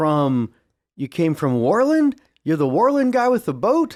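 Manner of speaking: startled, shocked disbelief, high and rising. Voicing a character surprised to see the players again: startled and surprised. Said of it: "shocked and surprised, startled".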